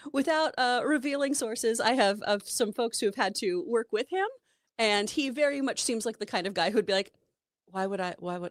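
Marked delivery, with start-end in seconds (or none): 7.7-8.5 put-on British accent. Imitating how a director would react to influencers: British accent. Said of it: "only in a British accent".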